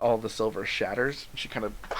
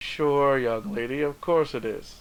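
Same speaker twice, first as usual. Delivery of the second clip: smug, self-satisfied tone; 3 semitones higher than usual. Voicing a character who doubts a player's claim: smirking. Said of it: "She just kinda smirks at you".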